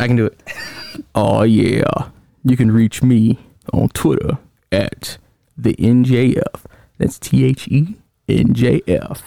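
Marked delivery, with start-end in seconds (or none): 1.2-9.2 faked deep voice, pitched lower. Giving contact details on a retry, after being teased: put-on deep voice. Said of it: "Your voice ain't gonna get deep like this".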